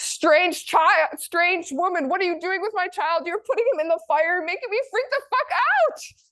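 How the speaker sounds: very high, frantic, freaked-out scream. Retelling a myth, quoting a spying mother: imitating a scream. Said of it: "She screamed".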